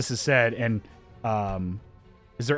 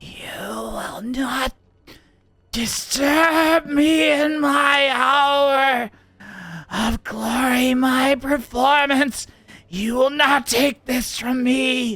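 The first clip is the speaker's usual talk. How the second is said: strained, stretched creature voice, much higher and slower; 11 semitones higher, 3 dB louder than usual. Narrator voices the words heard from a long-reaching creature in a strained, stretched creature voice. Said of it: "like strained voice as it reaches out".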